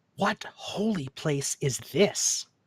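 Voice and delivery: hushed, confiding, close whisper. A bewildered character leans in to speak to you, whispering. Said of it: "He lowers his voice and uh as if and leans in to whisper to you".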